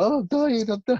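very high, spent, exhausted, pleading dying groan. Retelling how someone mocked a struggling fighter: imitating exhausted pleading. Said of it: "doing an impression of him".

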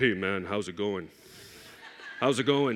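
very low, easygoing, buddy-buddy brotherly voice. Retelling how he answers his brothers' phone calls, imitating his changed voice. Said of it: "my voice changes".

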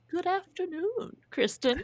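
shrill, high, fancy fake British accent. Greeting the other host at the start of the podcast, in a funky little british accent. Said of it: "Do you have a funky little British accent?".

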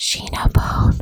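ASMR-style whisper.

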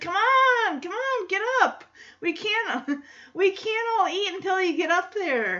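put-on pushy, insistent, high-pitched kid voice.

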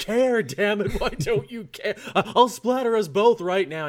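put-on high, loud yell. Recounting a comic scene, acting out Batman yelling at Deathstroke. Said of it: "he's just yelling at Deathstroke like".

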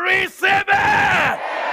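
high, slow, shouted proclaiming tone.

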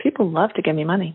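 put-on, plain, matter-of-fact delivery. Recounting going through a whole list said aloud: deliberately matter-of-fact tone. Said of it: "So I just said it matter-of-factly".

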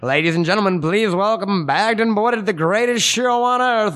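put-on high, old-timey vintage radio announcer voice. Talking about doing the show intro, doing it in an old-timey radio announcer voice. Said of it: "I feel like an old-timey radio guy".

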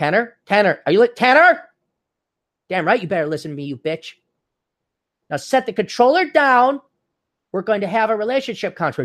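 high, bossy, demanding woman's voice. The speaker acts out what women say, imitating a woman. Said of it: "You know it was women like".

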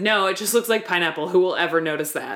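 ordinary delivery

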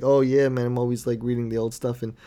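normal talking voice

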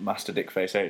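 ordinary talk

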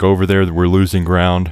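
ordinary delivery

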